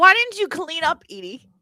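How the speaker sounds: high, reproachful, nagging scolding tone. Retelling what she asked Edie: imitating her scolding question. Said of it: "She goes".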